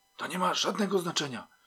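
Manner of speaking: whispering. A policeman finally replies to his colleague outside a door; whispering. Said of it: "powiedział wreszcie także szeptem".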